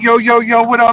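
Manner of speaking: casual, loose thug-style street-slang delivery. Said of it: "They call you and they're just like".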